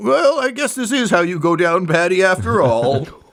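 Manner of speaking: muffled, high-pitched voice. A storyteller voices a captive being wrapped up and carried off: muffled voice as Patty. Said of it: "you kind of hear a muffled like".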